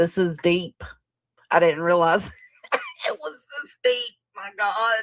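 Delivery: words broken up by laughing. Reacting to another speaker's explanation about the case, laughing while talking. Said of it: "you gotta stop laughing".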